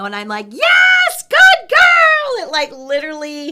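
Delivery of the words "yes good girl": squeaky, very high-pitched, very loud voice. Retelling how she praises during training, in a high squeaky voice. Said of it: "I have a high squeaky voice".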